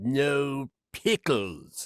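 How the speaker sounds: cartoon character voice. Listing cartoon roles voiced, then giving a line: Bubble Bass voice. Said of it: "And then there's Bubble Bass".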